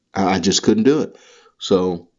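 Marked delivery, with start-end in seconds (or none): none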